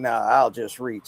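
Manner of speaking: put-on sneering tone. Retelling a man's reply after being asked to just ask: imitating a sneer. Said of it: "he sneers".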